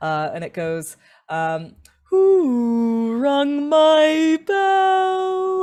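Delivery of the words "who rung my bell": resonant, very loud, very slow, booming, echoing, drawn-out. A storyteller voices a voice the listeners hear, loud echoing voice. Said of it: "you hear this loud, echoing voice uh, that just sort of resonates inside your rib cage".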